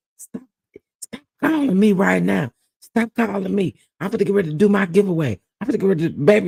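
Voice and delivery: mock-angry cussing. Retelling what a woman said to people calling her phone during her live, imitating an angry rant. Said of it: "she was cussing people out so bad".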